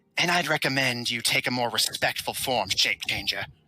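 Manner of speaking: harsh, close-up raspy woman's voice. A woman pressing a crossbow bolt to someone's neck speaks into their ear, raspy female voice. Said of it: "a female voice rasps into your ear".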